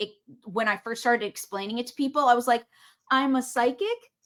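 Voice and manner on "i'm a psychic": psychic said with pitch rising at the end. Recalling first telling people about being psychic, question intonation on psychic. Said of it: "Question mark".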